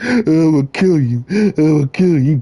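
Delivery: mock tearful crying out. Retelling a man's threat in a parking lot: imitating someone crying out a threat.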